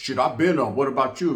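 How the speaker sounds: ordinary delivery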